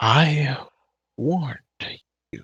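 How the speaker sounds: booming, thunderous voice like a thunderclap. Game master voicing a voice from the forest warning the players: voice like thunder cracking. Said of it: "you hear a voice like thunder crack from the forest".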